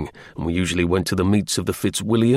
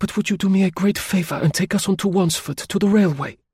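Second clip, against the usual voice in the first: breathless, high-pitched exclamation, out of breath; 8 semitones higher than usual. A lady standing in the muddy road asks the narrator for a ride; exclaimed breathlessly. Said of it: "she exclaimed breathlessly".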